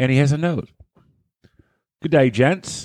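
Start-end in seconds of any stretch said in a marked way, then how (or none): 2.0-2.9 put-on Australian accent, higher. Reading a listener's note aloud: put-on Australian accent. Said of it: "Keep doing it in the Australian accent".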